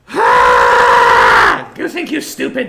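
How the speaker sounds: deep shouted outburst. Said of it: "Goo's just gonna go".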